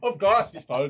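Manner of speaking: terrible put-on Irish accent. Naming a film's cast to co-hosts; terrible irish accent. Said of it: "That's my terrible Irish accent".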